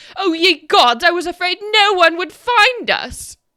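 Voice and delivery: very loud, high, ringing called-out voice. Voicing a voice from an orb, relieved at being found: voicing trapped Professor Scant. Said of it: "a voice rings out".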